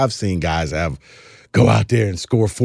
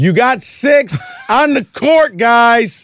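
loud, very high, very slow, drawn-out hollering; 5 dB louder than usual. Late in a game, retelling yelling at the players on the court. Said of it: "I'm literally yelling".

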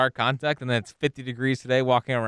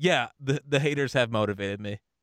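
usual speaking voice

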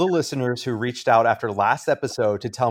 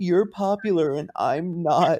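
mock crying, higher pitch; 6 semitones higher than usual. Retelling what a contestant said while crying to Cody: imitating someone crying. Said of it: "he's crying to Cody and being like".

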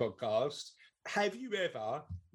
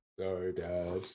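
mock deadpan delivery, pitched much lower; 8 semitones lower than usual. A father acts out his daughter Charlotte's insincere apology: imitating Charlotte's deadpan sorry. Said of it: "She goes like proper deadpan".

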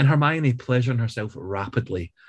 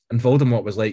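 usual speaking voice

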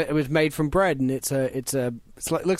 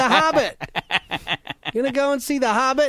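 fake American accent, higher pitch; 10 semitones higher, 4 dB louder than usual. Asking about seeing the hobbit: put-on american accent. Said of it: "I love his American accent".

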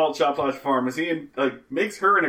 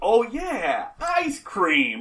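very slow, drawn-out, high, sinister menacing tone; 6 semitones higher than usual. Retelling a tv character's reaction to the idea of free ice cream: mock-menacing. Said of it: "like, menacingly".

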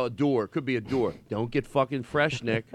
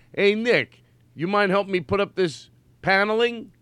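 loud, high, put-on Philadelphia character voice; 6 semitones higher, 5 dB louder than usual. Doing a bit and starting the line: Philly character voice. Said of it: "you're already doing the Philly character".

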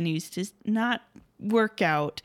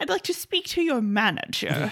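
poorly done put-on English accent; 3 semitones higher than usual. Acting out readers writing in about Sherlock Holmes being killed off; bad English accent. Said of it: "That's not the best English accent".

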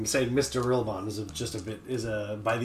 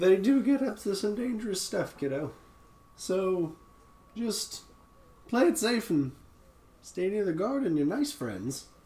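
put-on high-pitched gnome character voice; 8 semitones higher than usual. A gnome character talks to a kid, in a gnome voice. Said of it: "still a gnome voice".

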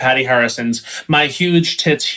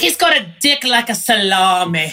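put-on higher-pitched English accent; 8 semitones higher than usual. Quoting Sharon Osbourne's review of a sex tape, as a Sharon Osbourne impression. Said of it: "She goes".

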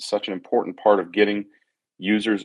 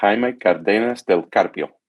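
name said with Argentinian Spanish accent; 3 dB louder than usual. A host reads out a viewer's full name with an argentinian accent. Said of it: "that was with an Argentinian accent".

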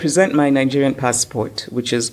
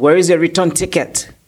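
snooty, haughty, pitched-up, official-sounding voice; 5 semitones higher, 3 dB louder than usual. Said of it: "And he says".

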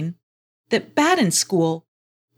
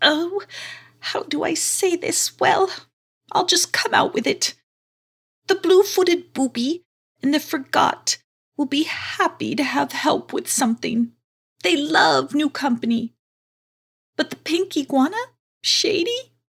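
put-on fretful, hesitant old tortoise voice, pitched higher; 8 semitones higher than usual. Reading a story aloud, voicing the tortoise speaking to Bat in School: Turtleline, concerned old tortoise. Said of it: "Baden School opened her eyes and came face to face with a real-life giant tortoise. / She seemed very concerned, / I'm almost 90 years old, / Oh, dear, what am I going to do with you now?".

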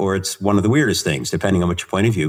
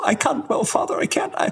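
put-on tremulous nun voice, much higher pitch; 4 dB quieter than usual. Telling a joke, voicing a nun at confession, in a put-on tremulous nun voice. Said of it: "tremulous nun goes into confession".

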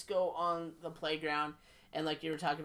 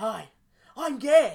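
very loud, high, cocky, overconfident voice; 6 semitones higher, 13 dB louder than usual. Retelling a comedy skit where a character greets partygoers: Ace Ventura voice. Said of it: "he walks and talks just like Ace Ventura".

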